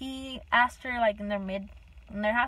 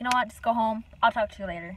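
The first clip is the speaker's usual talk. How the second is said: ordinary delivery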